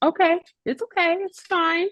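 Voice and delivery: soothing, calm, very high-pitched voice. Retelling tagging the wrong player, the speaker imitates Amy's calm voice. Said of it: "she was really calm at the moment".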